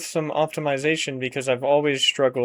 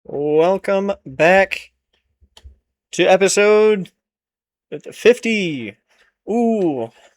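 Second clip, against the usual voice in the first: very slow, effortful, pitched up, drawn-out forced excitement; 5 semitones higher, 6 dB louder than usual. Opening a new episode, trying to sound excited. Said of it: "was that exciting enough?".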